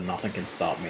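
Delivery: ordinary talk, nothing marked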